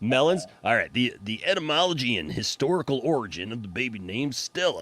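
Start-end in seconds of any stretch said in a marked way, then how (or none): 0.9-4.8 formal, official announcer voice. Host announcing the baby name whose origin they will look up, official announcer voice. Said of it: "This is my official voice".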